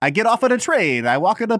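put-on crude, high Italian accent. Quoting the Mussolini character from a comedy, in an offensive Italian accent. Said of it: "He has like the offensive Italian".

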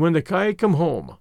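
usual speaking voice

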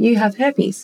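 gentle, kindly, tender woman's voice. Retelling what a gentle lady said to the speaker: imitating a gentle lady's voice. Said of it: "she like pursed her lips and she was like".

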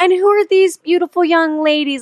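high, cute, sweet voice. Retelling how Lorraine greets the young ladies: imitating Lorraine's cute greeting. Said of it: "just how she says it".

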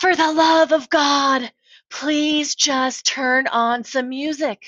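high, slow, drawn-out yell.

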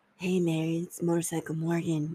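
mock creepy, unsettling put-on voice. Picturing his message to a woman from the property management company, mock-creepy voice. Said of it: "Just like this real, like, creepy".

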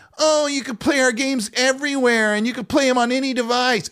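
high, taunting, derisive put-on voice. Retelling how a panel member mocked a company's claim: imitating a mocking voice. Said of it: "he literally did a voice like that".

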